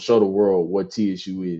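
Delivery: plain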